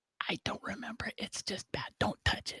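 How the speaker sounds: secretive, hushed, breathy whisper, barely voiced. The game master voices her whispered reply to a player's question, whispering. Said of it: "She whispers again to you".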